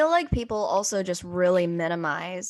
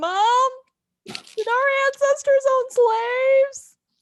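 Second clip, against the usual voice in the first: mock very high, weepy, drawn-out crying wail; 5 dB louder than usual. Retelling a TV scene where Andy cries in the corner: imitating Andy crying. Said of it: "crying in the corner over there going like".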